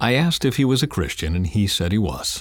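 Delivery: ordinary delivery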